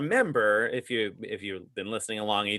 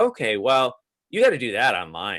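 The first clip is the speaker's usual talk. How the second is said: mock condescending, dismissive tone, slower; 5 dB louder than usual. Retelling a phone agent's reply to his wife's transfer request: mock-condescending agent tone. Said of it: "did she make your wife sound like seem stupid?".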